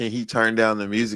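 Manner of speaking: ordinary talk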